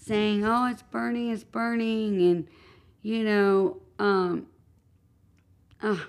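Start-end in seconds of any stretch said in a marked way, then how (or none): none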